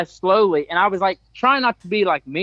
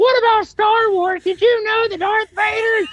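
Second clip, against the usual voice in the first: very high, extremely high-pitched, nonstop chatter. Retelling a man who kept talking to him nonstop: extremely high-pitched voice. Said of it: "it's just extremely high pitched".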